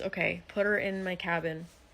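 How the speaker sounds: normal talking voice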